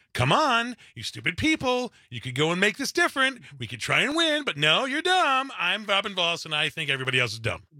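condescending, talking-down voice. Mocking how Robin Voss advises his own people, a condescending Robin Voss impression. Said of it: "he's sounding condescending".

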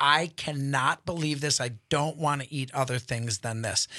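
ordinary talk, nothing marked

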